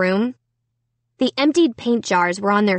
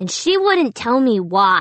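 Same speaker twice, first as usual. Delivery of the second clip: plain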